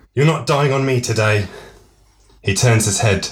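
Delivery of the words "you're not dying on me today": firm, severe and stern, higher. Reading a scene where he clears her airway: stern. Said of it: "he sternly says to Natalia".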